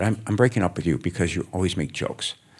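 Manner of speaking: ordinary delivery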